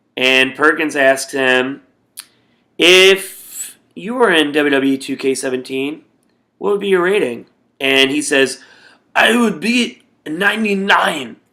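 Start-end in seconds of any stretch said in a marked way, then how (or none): 9.1-11.2 high-pitched, badly mangled broken English. Retell a backstage interview answer about a game rating, in a really bad English Ibushi impression. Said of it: "so it's my really bad English impression".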